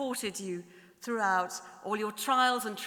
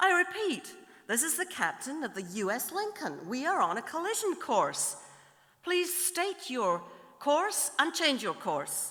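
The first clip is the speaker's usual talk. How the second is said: slight, mild put-on American accent; 4 semitones higher than usual. Telling a joke, voicing the captain of the U S Lincoln in a slight American accent. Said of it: "I have to do a slight American accent".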